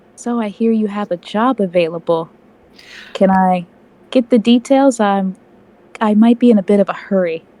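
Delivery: quiet whisper in an acted voice. Speaking in character, asking about a job: whispering in character. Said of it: "you were whispering".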